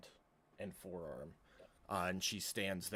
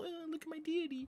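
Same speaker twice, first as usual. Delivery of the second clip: very high, prissy, snooty, sneering sarcastic voice. Complaining about magic users showing off, the speaker mimics them: mocking imitation of magic users. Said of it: "they just walk up all".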